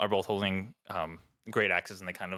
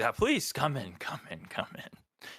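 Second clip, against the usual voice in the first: slow, chuckling, laughing through the words; 4 semitones higher than usual. Voicing a character inviting the visitors in, chuckling while talking. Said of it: "He's kind of chuckling, laughing".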